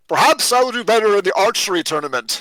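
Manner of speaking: half-shouted voice.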